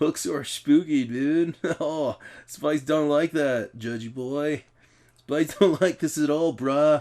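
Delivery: put-on California surfer voice. Doing a voice on request, california surfer dude voice. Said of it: "Do like a California surfer dude".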